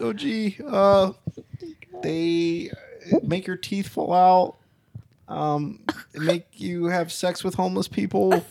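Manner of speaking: put-on high-pitched cartoon kid voice. Playing the kid asked about drugs in a skit: Morty voice. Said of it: "He's gonna whip out the Morty voice".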